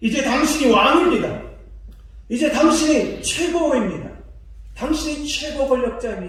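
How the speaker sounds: flattering, fawning voice.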